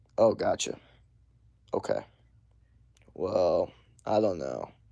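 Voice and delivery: slow, very quiet, hushed, drawn-out, unhurried delivery. Showing guys how to talk to girls they want to attract: slow tone. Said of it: "Like slow".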